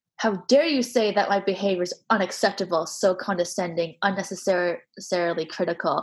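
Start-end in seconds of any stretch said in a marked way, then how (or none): none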